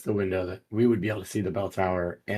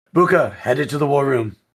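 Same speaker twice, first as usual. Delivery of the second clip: very loud, high yell at full volume; 5 semitones higher, 10 dB louder than usual. Dashing toward the war room while calling to an ally: yelling in character. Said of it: "I'm just gonna yell".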